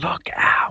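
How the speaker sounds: put-on soft, whispered ghostly little girl voice. Quoting a little dead girl's warning in a game: imitating a dead girl's whisper. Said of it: "a little dead girl whispering".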